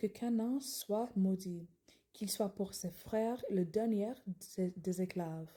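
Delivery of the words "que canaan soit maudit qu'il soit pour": ordinary delivery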